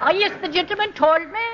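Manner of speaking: thick Irish brogue. Demonstrating how to twist the word 'told' with extra L's, good brogue. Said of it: "make it a good brogue".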